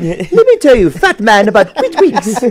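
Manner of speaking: put-on high, swooping, posh British cartoon baby voice. Speaker riffing on how a name sounds to him: Stewie from Family Guy voice. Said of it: "I think of Stewie on Family Guy".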